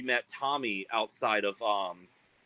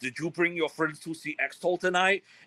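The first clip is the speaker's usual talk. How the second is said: put-on heavy Norwegian accent, pitched up; 6 semitones higher than usual. Retelling what a norwegian band's guitar player asked them, in a heavy norwegian accent. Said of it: "He had like really heavy accent".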